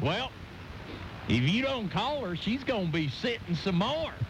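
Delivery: put-on rural Oklahoma accent. At 4:30 in the morning, a man from Oklahoma chimes in; Billy's get-her-done accent. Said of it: "chimes in with his get-her-done accent and goes".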